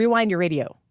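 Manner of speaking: quick, snappy, fast, rattled-off delivery. Speakers take turns saying a phrase quickly, one showing how: said fast. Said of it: "Try it fast".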